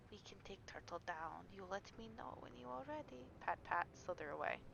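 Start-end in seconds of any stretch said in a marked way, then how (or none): 0.1-3.2 very quiet, barely audible, secretive half-whisper. Playing a character in a game, half-whispering to another character: half-whispered. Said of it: "Havu whispers to Alomiak / That was a whisper".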